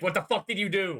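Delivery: put-on yelling game-character voice. Recounting a childhood nightmare, the speaker acts out imitating Professor Oak yelling. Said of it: "Professor Oak yelling at me like".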